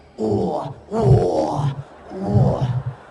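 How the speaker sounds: very low, rough, drawn-out tiger growl. Speaker mocking how possessed people always act, imitating a tiger-possessed person. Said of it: "Jadi macan. Selalu jadi macan".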